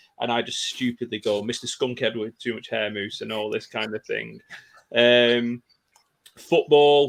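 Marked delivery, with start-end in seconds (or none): none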